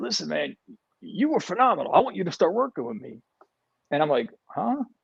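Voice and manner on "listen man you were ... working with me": put-on gruff voice, pitched higher. Speaker retelling what a super funny guy told him, imitating Joe Cool's gruff voice. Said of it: "real like like gruff voice".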